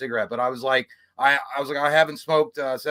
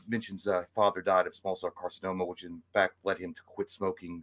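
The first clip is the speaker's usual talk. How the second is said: dictating to himself, self-narrating notes spoken aloud; 7 semitones lower, 8 dB quieter than usual. Retelling how a doctor talked to himself during a visit: imitating doctor narrating aloud. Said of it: "talks to himself while you're telling him".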